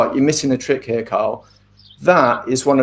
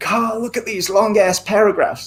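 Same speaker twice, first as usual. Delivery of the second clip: terrible fake American accent, pitched up; 8 semitones higher than usual. Quoting an American author who corrects you for long paragraphs, bad American accent. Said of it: "that's a terrible accent".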